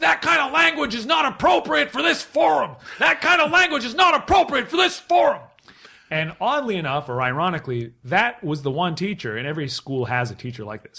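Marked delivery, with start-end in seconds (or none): 0.0-5.4 put-on screaming, higher and louder. Retelling a science teacher heckling from the bleachers: imitating a teacher screaming. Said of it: "he started screaming over the student body".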